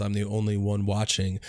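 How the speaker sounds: ordinary talk, nothing marked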